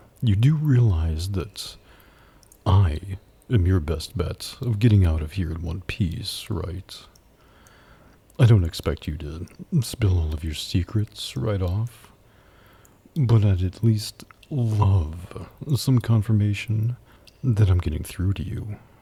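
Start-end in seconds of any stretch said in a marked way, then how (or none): 8.4-18.8 flirtatious, teasing tone in a deep voice. A demon at a private sale talks to a stubborn captive, flirty, deep voice. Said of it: "[ASMR] Demon Gets A Private Sale... [M4A] [Enemies to ???] [Flirty] (uploaded 2025) / [ASMR] Demon Gets A Private Sale... [M4A] [Enemies to ???] [Flirty] (uploaded 2025) / #asmrroleplay #deepvoice #su".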